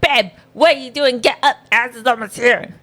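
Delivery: very high, curt, blunt voice, acted out. Retelling how the partner flung the door open to wake her: imitating partner's blunt wake-up call. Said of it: "That's not even how I sounded".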